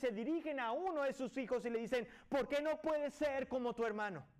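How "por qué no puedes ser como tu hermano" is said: put-on half-exasperated, somewhat frustrated motherly scolding tone. Acting out a mother scolding one of her children: imitating a somewhat frustrated tone. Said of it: "con un tono medio frustrante".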